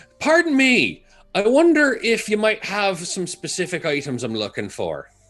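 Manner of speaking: loud character voice. Voicing a hard-of-hearing character asking a merchant for items: loud in-character voice. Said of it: "obviously loud to these people".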